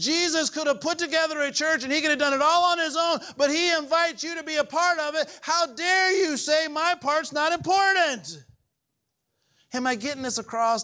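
loud, full-volume yelling. Speaker addressing the crowd, pressing them to take it in: yelling at the audience. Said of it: "I'm yelling at you guys".

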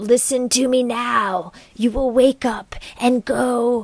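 put-on sinister, demonic, evil old hag voice. Retelling what a hag in the sink whispers at night: demonic old hag voice. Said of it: "is a demonic old hag".

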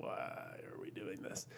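low, whispered, skeptical tone.

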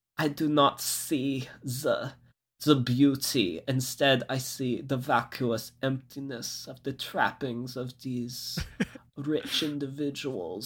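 dead serious delivery in German accent. Imagining a documentary by Werner Herzog, Werner Herzog impression with very serious German accent. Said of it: "very serious German accent".

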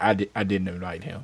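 mock flat delivery. Retelling what another man said back then, in a put-on deadpan delivery. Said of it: "I just said it so deadpan".

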